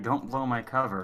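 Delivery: whispering in a character voice. Voicing Triple, who whispers to Fortuna not to give him away: whispering in character. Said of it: "Triple is going to whisper to you".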